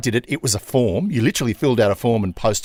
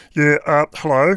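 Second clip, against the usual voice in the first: odd, funny, puppet-like frog voice; 4 semitones higher, 3 dB louder than usual. Imitating the suited guy with a funny voice who handled your application, in a Kermit the Frog voice. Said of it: "Like Kermit the Frog?".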